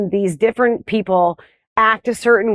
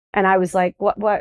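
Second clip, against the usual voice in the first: ordinary talk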